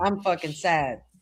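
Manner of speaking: mad-sounding outburst. Reacting to news that a wrestling group is gone: sounding mad, not sad. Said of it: "Doesn't really sound like you're sad".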